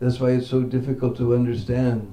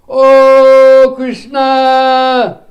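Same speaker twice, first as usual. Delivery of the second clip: shouting a call, higher and louder; 13 semitones higher, 15 dB louder than usual. Retelling the cowherd boys calling for Krishna in the forest: calling out across the forest. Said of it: "And they all call".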